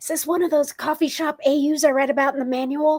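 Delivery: hushed stage whisper. A character stage-whispers a question to the doctor: stage whisper. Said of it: "sort of stage whispers to the doctor".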